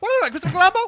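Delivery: mock rushed delivery. Imitating a dubbing actor squeezing a line in: imitating a rushed, fast delivery. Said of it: "he had to say that so fast".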